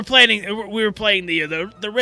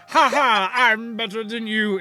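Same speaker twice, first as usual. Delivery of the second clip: put-on haughty nobleman voice, quieter; 4 dB quieter than usual. Showing another speaker they can do the same voice too, haughty nobleman voice. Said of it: "I can do the same thing as well".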